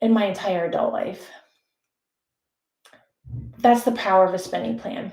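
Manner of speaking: voice on the verge of tears. Sharing a personal story, the speaker is on the verge of tears. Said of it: "I'm going to cry".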